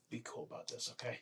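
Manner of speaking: breathy, very hushed, very quiet whisper. Playing a character who whispers into a tiny dragon's ear: whispering in character. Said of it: "I whisper in his ear".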